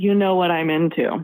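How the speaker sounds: whispered voice. Retelling what he whispered in an intimate moment: imitating a whisper. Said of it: "he whispers in my ear".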